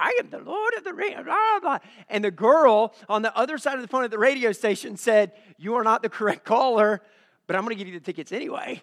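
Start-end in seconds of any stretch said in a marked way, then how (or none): 0.0-1.8 very high, goofy, silly, funny put-on voice. Getting through to a radio station for free tickets, the caller answers in a funny put-on voice. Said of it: "I just start making this funny voice".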